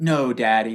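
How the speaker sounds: acted, loud, firm, forceful putting-foot-down tone. Retelling how she refused during play: imitating a forceful tone. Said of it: "putting her foot down tone".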